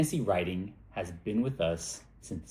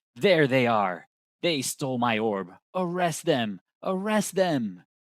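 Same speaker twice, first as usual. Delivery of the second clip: put-on loud, crazed, drunken shout; 4 semitones higher, 5 dB louder than usual. A narrator voices a drunk man pointing at the party's table, yelling. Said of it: "points right at your table and yells".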